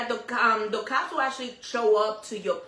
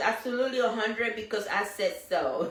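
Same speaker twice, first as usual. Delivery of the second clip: plain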